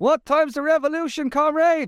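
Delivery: shrill, very high-pitched shout. Retelling what a passing cyclist always shouts: imitating someone shouting. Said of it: "And he shouts, he goes".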